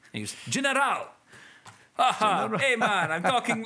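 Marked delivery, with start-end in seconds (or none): 2.4-3.6 put-on Jamaican accent. Speaker describing an actor's Street Fighter role, voicing General: General's Jamaican accent. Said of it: "i'm jamaican because i talk like this".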